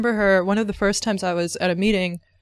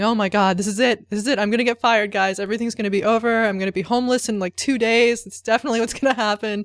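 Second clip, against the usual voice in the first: mock, full-panic freaking out. Retelling a moment at work when a program failed: imitating own panicked freakout. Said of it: "I started freaking out and going".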